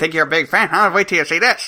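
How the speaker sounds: put-on voice talking around a clenched cigar. Pretending to be Groucho Marx chomping a cigar: Groucho Marx voice. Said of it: "as you're chomping on a cigar, you go".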